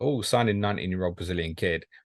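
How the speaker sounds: ordinary talk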